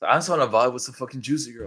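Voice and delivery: mild yelling outburst, faint echo of screaming. Retelling what they screamed after blacking out: imitating own past screaming. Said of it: "apparently I was screaming out of the top of my lungs".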